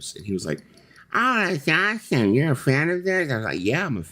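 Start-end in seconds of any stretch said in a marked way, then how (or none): 1.1-3.3 put-on, very high voice with peculiar speech manner. Retelling a conversation, the speaker acts out the other man's reply, imitating exactly how he talks. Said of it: "this is the way he talks. Exactly like this".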